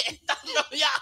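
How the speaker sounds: high, mock police officer shout.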